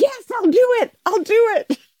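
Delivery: acted-out very high-pitched, shrill yelling. Imagining a listener yelling into the radio to agree: imitating Christy yelling. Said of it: "she's yelling into the radio right now".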